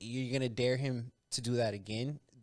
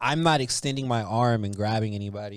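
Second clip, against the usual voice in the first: ordinary delivery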